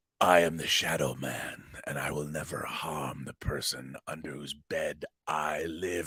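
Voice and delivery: low, quiet, hushed, subdued voice. Retelling the end of an episode as the Shadow Man speaks; subdued Shadow Man voice. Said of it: "I was a little bit more subdued with my Shadow Man voice".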